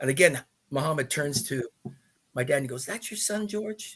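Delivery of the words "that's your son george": put-on poor, quiet Kentucky accent. Retelling how Muhammad Ali turned to your dad in the limo, in a bad Muhammad Ali Kentucky accent. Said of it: "I'm trying to do his Kentucky accent".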